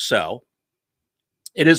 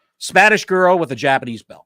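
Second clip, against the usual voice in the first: ordinary talk, nothing marked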